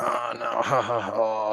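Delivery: acted cartoonish laugh. Retelling how they answered their mom about church, imitating a Simpsons mocking laugh. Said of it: "like the Simpsons".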